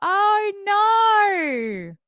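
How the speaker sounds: shrill, swooping, high, loud Australian accent. Speaker shows listeners how anybody can say no; australian accent. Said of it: "anybody can say in Australian".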